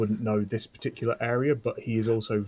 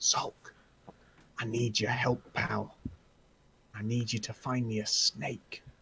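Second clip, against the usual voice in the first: hushed, hunkered-down conspiratorial half-whisper; 5 dB quieter than usual. Playing a character hunkered down, asking Zolk for help, half-whispering. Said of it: "just whisper to Zolk".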